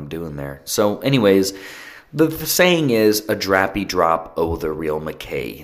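normal talking voice

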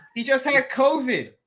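very slow, high, dragged-out yelling. Complaining about a player being brought back, yelling. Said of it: "I'm not gonna stop yelling".

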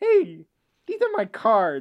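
high, loud, swooping voice, every s lisped. Speaker does his impersonation of Jay Leno, a Jay Leno impression with lisp. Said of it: "This is my impersonation of Jay Leno. He did have a lot of lisp".

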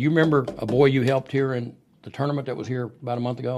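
ordinary delivery

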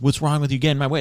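put-on drunk angry half-yell. Retelling a drunk man yelling at a hurt cyclist, imitating a drunk yelling. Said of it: "the drunk has like yelling at him".

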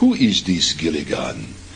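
heavily laid-on, swooping cartoon Russian accent. Speaker recalls playing a Russian spy, in a Bullwinkle-style Russian accent. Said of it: "doing a very almost Bullwinkle, you know, type of, you know, accent".

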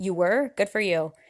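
put-on very rude, dismissive tone. Retelling what he said to her, imitating a rude reply. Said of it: "just very rude".

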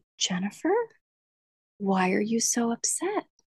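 soft, slow, cool, condescending mock-calm tone. Recalling how, mid-fight, he would suddenly calm down and ask this; imitating him calmly. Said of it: "he would calm down and he would say".

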